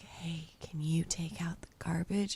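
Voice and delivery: very low, close, intimate whisper. Speaker retells whispering a request into his ear, whispering. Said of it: "I whispered in his ear".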